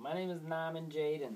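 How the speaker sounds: bad put-on Boston accent. Speaker imitates how a guy talks, in a bad boston accent. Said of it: "He tries to use a Boston accent. It's just terrible".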